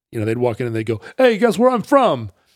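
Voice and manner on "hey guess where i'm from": very high-pitched put-on New York accent. Retelling New Yorkers walking into the newsstand: imitating a New Yorker. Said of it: "they're New Yorkers".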